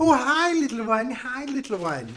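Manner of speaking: high, slow, drawn-out storybook witch voice. Voicing a witch greeting a player: voicing the witch. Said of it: "The witch is seeing you, and she's going".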